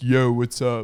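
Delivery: faked deep, throaty, swaggering low voice. Describing a boy faking a deeper voice, imitating his forced deep voice. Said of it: "he was trying to make it sound deeper".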